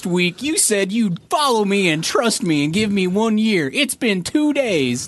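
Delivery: bad put-on Southern accent. Quoting a character from a show she calls horrible, in a bad southern accent. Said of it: "you do the worst Southern accent".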